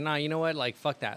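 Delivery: plain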